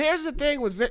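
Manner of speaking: very high, loud, punchy comic delivery. Noticing a Seinfeld-like tone and repeating the line: Jerry Seinfeld voice. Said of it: "I sound like Jerry Seinfeld".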